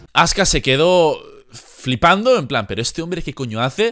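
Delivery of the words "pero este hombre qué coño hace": plain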